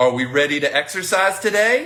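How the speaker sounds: pitch climbs up on "today". Rephrasing a question about exercising today, rising tone on 'today'. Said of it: "you hear how my tone kind of goes up?".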